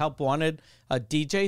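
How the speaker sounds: plain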